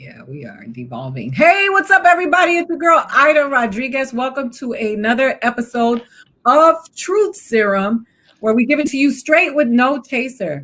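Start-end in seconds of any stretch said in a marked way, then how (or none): 1.3-10.6 shouting at full volume, loud yelling. Host welcoming everybody to another episode, yelling. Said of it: "I don't know why I'm yelling".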